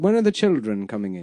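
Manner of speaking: put-on old-time Hollywood accent. Showing the way people used to say children: old-time Hollywood accent. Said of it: "the way they used to say children".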